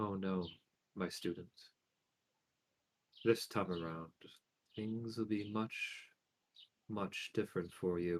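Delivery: very soft, hushed whisper, barely above breath. Narrator voicing Sky addressing the student, in Sky's whisper. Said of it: "just whisper".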